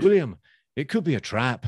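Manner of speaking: put-on terrible, very loud, high-pitched Scottish accent. Retelling a scene, the speaker voices the hero's Scottish mates warning him, in a terrible Scottish accent. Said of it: "Terrible Scottish accent there".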